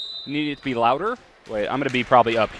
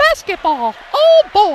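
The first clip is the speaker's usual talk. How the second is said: squeaky, high, bouncy voice; 11 dB louder than usual. A game announcer, trying a different voice tonight, calls out in a Mickey Mouse voice. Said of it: "Mickey Mouse?".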